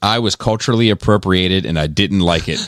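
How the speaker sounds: usual speaking voice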